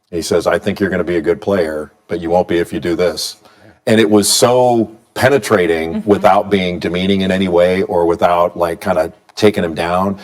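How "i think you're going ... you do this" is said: play-acted flat, even, unchanging monotone throughout. Quoting what he said to Mason, retelling it in a flat monotone. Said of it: "in a very very monotone".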